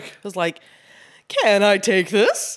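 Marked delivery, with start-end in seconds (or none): 1.3-2.6 very slow, dawdling, drawn-out delivery. Imitating the kid who picked up plates tonight: imitating the waiter kid. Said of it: "What did he sound like?".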